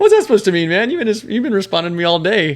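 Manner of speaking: offended tone.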